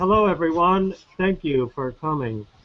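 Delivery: put-on stiff-necked manner. Pretending to greet viewers while wearing a neck brace: pretending to be stiff. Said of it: "all stiff like this".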